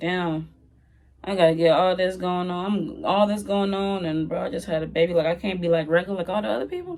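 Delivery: normal talking voice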